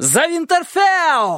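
very high, shrill, rousing shout. Robb shouts as he spurs his horse against the attackers. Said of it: "Роб крикнул".

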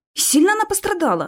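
aghast, horrified, voice shooting very high. The narrator asks how badly she was hurt after hearing whose blood it is, horrified. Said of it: "Ужаснулся я".

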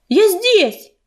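loud shouted calling out. Narrator reads the healer answering someone calling her name, shouted. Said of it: "крикнула она".

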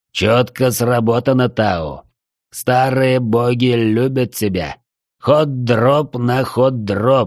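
growled character voice. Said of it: "прорычал Джархан".

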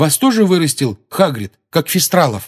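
hungry, keen, eager, high-pitched voice. Narrating a boy questioning someone whose herd drove him out: eager question. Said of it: "жадно спросил Дин".

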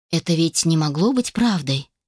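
usual speaking voice

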